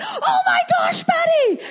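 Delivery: mock alarmed cry, very high and loud. Retelling her own reaction to the son's trick: retelling her own panicked scream. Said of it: "Just screamed out".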